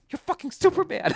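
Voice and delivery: thrilled, excited gushing, pitched way up. Retelling what Rachel said behind him in a field: imitating Rachel's excited voice. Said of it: "And she was so excited".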